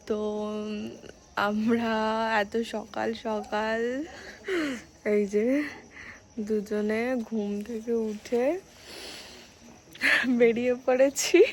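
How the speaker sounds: soft, hushed, sleepy voice.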